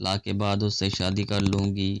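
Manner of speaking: ordinary delivery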